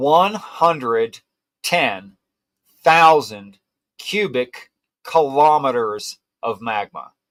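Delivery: measured, purposeful, unhurried, very deliberate delivery. Stating a hard-to-absorb fact so listeners take it in, slow and deliberate. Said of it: "I'm going to say this slowly and very much on purpose".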